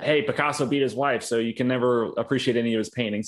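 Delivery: plain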